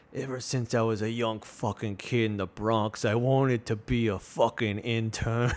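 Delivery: narrated like a film voiceover intro. The speaker performs the opening voiceover of The Intern as a Robert De Niro impression. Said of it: "this is me doing my impression of Robert De Niro".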